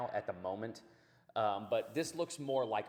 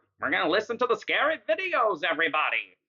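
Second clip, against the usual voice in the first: very high, very loud, shrill, swooping horror-host voice; 9 semitones higher, 13 dB louder than usual. Introducing the scary videos to everybody: Crypt Keeper voice. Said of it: "pretty close to what the Crypt Keeper sounds like".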